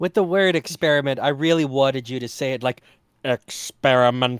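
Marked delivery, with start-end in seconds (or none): 3.2-4.4 dropped, low robotic cyborg voice. Showing how another reader should have said the word: Cybermen voice. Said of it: "No, Cybermen".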